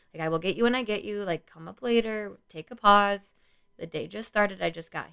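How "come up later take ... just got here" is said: mock calm, restrained, holding back. Speaker retells asking students crowding their office to come back later, put-on calm. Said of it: "And I said that very calmly".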